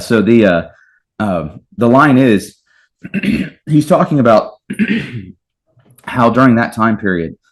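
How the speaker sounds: choked-up voice catching mid-sentence, stumbling words. Explaining a line from Kierkegaard, getting choked up. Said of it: "I'm getting choked up".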